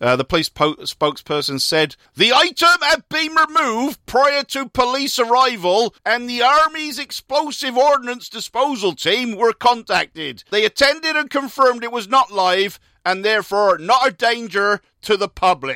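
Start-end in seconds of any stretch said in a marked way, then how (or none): 2.2-15.8 put-on high, loud Gloucestershire accent. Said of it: "That's a great Gloucestershire accent".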